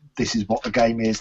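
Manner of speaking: normal talking voice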